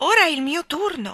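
high, loud, gleeful, joyful cry. A woman looks up at the carousel and claims her turn; joyful cry. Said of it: "gridò gioiosamente".

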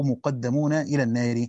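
ordinary delivery

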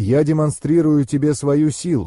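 ordinary delivery

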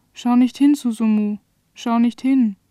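ordinary delivery

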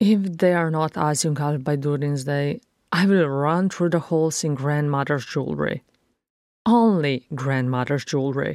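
ordinary delivery, nothing marked

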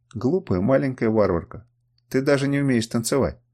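ordinary delivery

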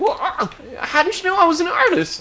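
squeaky little voice, very high. Retelling a scene, voicing the artist's reply in a squeaky Cakes voice. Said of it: "He's got a real squeaky voice".

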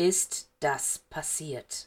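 slow, low, drawn-out, menacing and deliberate. Narrator voicing a man turning to question a boy, speaking slowly. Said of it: "sagte er langsam".

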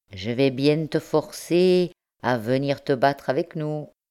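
ordinary delivery

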